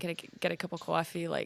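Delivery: Bostonian accent. Showing the accent they slip into for a character, in a boston accent. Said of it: "Boston accent".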